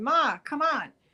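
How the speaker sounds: urgent, frantic scream of alarm. Recounting a dream, the speaker re-enacts calling out to Ma: retelling a scream. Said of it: "I'm screaming".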